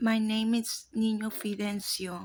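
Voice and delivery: put-on small, childlike little-kid voice. Retelling what a woman said while possessed, talking like a little kid. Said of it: "like a little kid, she says".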